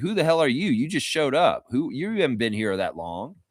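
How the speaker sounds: ordinary delivery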